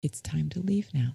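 very soft, gentle, kind, quick voice. Demonstrating what to say to him face to face, in a very soft, kind voice. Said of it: "in a very soft, kind voice".

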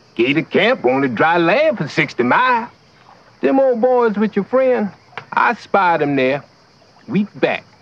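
put-on Louisiana swamp accent. Playing an undercover fisherman in the swamp: put-on louisiana swamp accent. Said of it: "why did we have to do that accent?".

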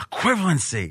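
mock muttering under the breath. Retelling a Seinfeld scene, imitating Kramer muttering under his breath. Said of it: "under his breath".

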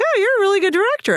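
put-on, very high, astonished tone. Retelling what people said after seeing the film: imitating surprised praise. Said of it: "Don't sound so surprised".

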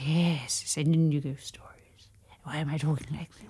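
hushed reverent voice. Inviting listeners to send in ghost stories: lowered reverent voice. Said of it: "lower your voice in sort of reverence".

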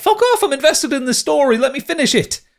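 high, exasperated outburst. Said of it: "I'm like".

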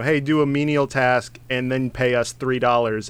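ordinary delivery

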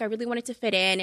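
ordinary talk

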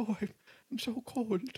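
put-on eerie, very high, ghostly dead-child voice. Describing a man who has spirits talk through him, impression of a dead Victorian child. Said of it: "do a sort of impression of a dead child".

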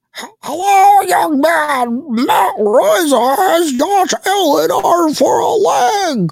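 very high voice, dragging out man. Football show host doing Bob's voice for the audience: imitating Bob. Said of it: "Bob goes in Bob's voice".

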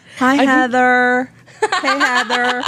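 put-on high-pitched blend of Southern and Valley Girl accents. Demonstrating the Ohio River Valley accent for the other speaker, in a Southern Valley Girl accent. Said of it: "You're nailing that".

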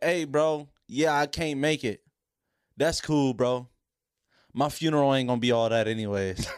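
usual speaking voice

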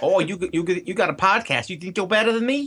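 fake Italian accent that sounds like New Jersey. Taking a turn at the accent bit, the speaker does a fake Italian accent that sounds Jersey. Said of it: "That's more Jersey than Italian".

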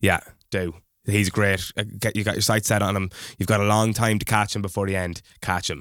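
usual speaking voice

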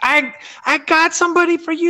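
very high-pitched scream. A player recalls an opponent screaming at him from the bench, imitating a high-pitched scream. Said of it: "this like guy screaming from their bench".

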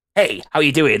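casual, normal-sounding, relaxed tone. Retelling the bath scene, where the clown greets casually: casual Pennywise voice.

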